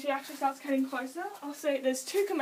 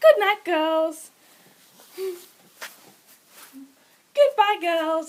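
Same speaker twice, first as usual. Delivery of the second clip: loud, put-on American accent; 4 semitones higher, 10 dB louder than usual. Demonstrating the calls you use for your guinea pigs, in an American accent. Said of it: "I was accidentally speaking in an American accent".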